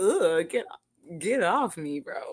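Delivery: tree voice, dismissive and brushing off. Reacting to a video by voicing a tree pushing someone away: voicing the tree. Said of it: "That tree is like".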